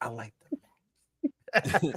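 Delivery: very slow, drawn-out words, spoken very close. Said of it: "And right in her ear, like".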